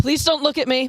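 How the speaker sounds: put-on yell. Retelling a college friend shouting at a tour group: imitating a yell. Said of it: "he would just yell".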